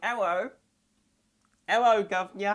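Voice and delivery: put-on British accent. Reacting to cat girl art, joking how british cat girls would talk, british accent. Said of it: "British cat girls be like".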